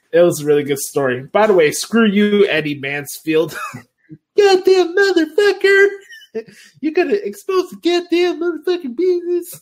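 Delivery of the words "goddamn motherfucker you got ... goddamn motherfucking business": very high, swooping rant with wild pitch swings. Addressing Eddie Mansfield while discussing a wrestling story, do your Jim Cornette impression. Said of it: "that's me doing my Jim Cornette impression".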